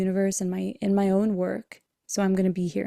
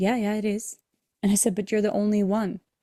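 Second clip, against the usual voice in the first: ordinary talk, nothing marked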